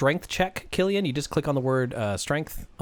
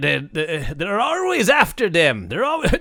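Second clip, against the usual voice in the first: put-on Jamaican accent, higher, louder; 4 semitones higher, 5 dB louder than usual. Told to speak leprechaun in a comedy bit, slipping into a jamaican accent. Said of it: "I went on Jamaican there".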